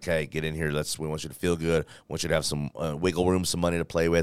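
ordinary talk

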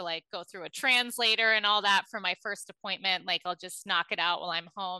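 ordinary talk, nothing marked

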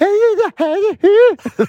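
very high, loud, slow mock squeal.

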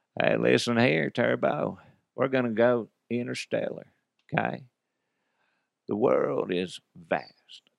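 rough, creaky, raspy movie-star voice. Showing the impressions they can do: Matthew McConaughey impression. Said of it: "I kinda do the Matthew McConaughey".

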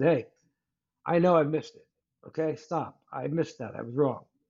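normal talking voice

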